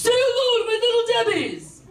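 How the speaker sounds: high-pitched, badly done impression yell. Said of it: "it's a horrible Scarface impression".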